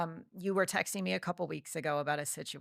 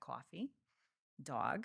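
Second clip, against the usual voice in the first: New Jersey vowels in "coffee" and "dog"; 3 semitones lower, 11 dB quieter than usual. Showing which words bring out the old accent: New Jersey accent. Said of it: "it'll come out when I say".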